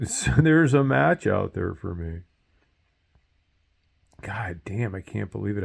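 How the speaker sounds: choked-up voice catching and breaking with emotion. Speaker telling of a stem cell donor match found for him, choked up. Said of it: "I'm choked up talking about it".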